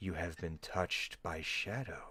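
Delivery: two voices at once. The lady answering a question, with two voices speaking at once. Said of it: "almost like there's two voices speaking".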